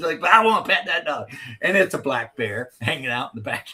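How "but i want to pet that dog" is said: put-on high young-girl voice with a strong Southern accent. Describing something they've seen, the speaker quotes a little girl in a really southern young girl voice. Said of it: "really southern, like young girl".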